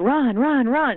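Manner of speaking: play-acted loud, high yelled delivery. Retelling what they yelled at the runners once done: retelling a yell. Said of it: "I would yell".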